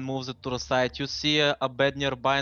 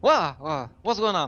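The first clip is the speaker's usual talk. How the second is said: bewildered woman's voice, higher and louder; 3 semitones higher, 4 dB louder than usual. Voicing a very confused woman seen on a picture: confused woman's voice. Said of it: "you see a very confused woman".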